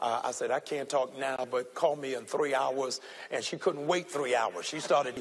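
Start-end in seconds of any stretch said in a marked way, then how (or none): none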